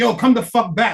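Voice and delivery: put-on furious bossy voice, loud and angry. Imagining a manager who storms in demanding a worker return: imitating an angry manager storming in. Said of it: "your manager storm in like".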